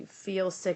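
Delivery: ordinary delivery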